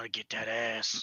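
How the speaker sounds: low, hushed mutter under the breath. Following tracks in pursuit of a fleeing figure: half-whispering under breath. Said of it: "whispering under my breath".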